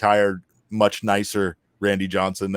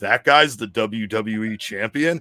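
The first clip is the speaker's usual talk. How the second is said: put-on, slow, utterly disbelieving, incredulous delivery. Retelling how Randy Johnson reacted on seeing the champion: imitating Randy Johnson, incredulous. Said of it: "with the most incredulous voice in the world".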